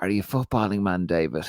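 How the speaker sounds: whispered words. Retelling what a man whispered in his ear during a photograph, retelling a whisper. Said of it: "he just whispers in my ear".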